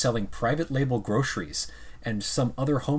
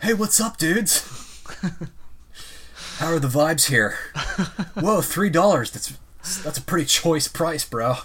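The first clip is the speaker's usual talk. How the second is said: put-on laid-back California surfer accent; 5 semitones higher, 5 dB louder than usual. Riffing on Adam Neumann, doing a surfer-dude Adam Neumann impression. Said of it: "you did like a California surfer dude voice".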